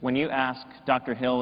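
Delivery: ordinary talk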